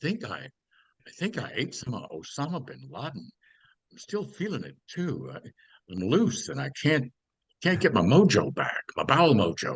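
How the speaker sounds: talking shark character voice. One shark answering another about what it ate, talking shark voice. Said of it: "That was your impression of a shark right there".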